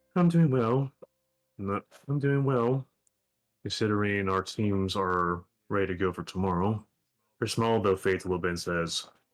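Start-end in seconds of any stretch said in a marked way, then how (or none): 0.2-6.9 warm, kindly, friendly tone. Voicing a character greeting another character at eye level: speaking warmly. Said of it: "She says warmly".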